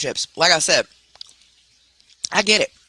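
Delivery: talking while eating, chewing mid-sentence. Speaker making a point about someone's attitude, talking while eating chips. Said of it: "sorry i'm eating".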